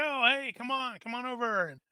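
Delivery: hearty, cheerful voice. Retelling how a man greets Kristoff, the speaker is imitating a jovial man. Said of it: "he seems to be in something of a very jovial mood".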